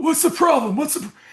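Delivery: gruff voice. Retelling what the football coach asked about the shoes: Coach Faust's gruff voice. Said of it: "He's got a real, you know, gr-, gruff voice".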